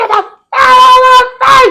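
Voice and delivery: mock very high, loud screaming yell. Retelling a funny argument where a woman screamed at them, imitating her screaming. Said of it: "she screamed and said".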